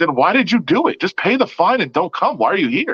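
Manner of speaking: sarcastic, needling tone. Retelling a question put to a fighter at a media day: imitating own snarky question. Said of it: "I'm saying it in a kind of a snarky way".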